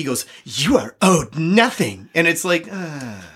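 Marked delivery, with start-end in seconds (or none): 0.4-2.1 mock crotchety, cranky, grumbling voice. Retelling how Gil-galad answers Elrond: cranky Gil-galad voice.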